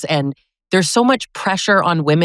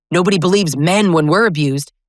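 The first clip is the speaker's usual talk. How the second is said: usual speaking voice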